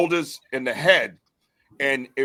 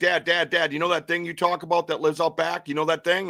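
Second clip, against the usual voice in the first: mock tearful, crying, frantic, freaked-out panic; 4 semitones higher than usual. Retelling a phone call from a crying son: imitating someone freaking out. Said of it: "he's, like, freaking out".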